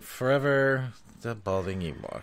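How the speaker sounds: put-on doomed, weary, eternally resigned delivery. Mimicking the other host's self-introduction: imitating a weary purgatory tone. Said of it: "You're like".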